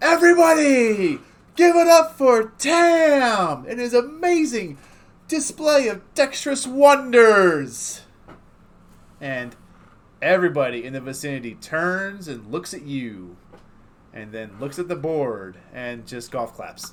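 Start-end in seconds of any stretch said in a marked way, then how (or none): 0.0-8.0 put-on booming, high, full-volume drunken yell, one word drawn out. Voicing a drunk game host announcing a winner to the crowd: loud drunken yell. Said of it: "as loud as he can yell, he yells".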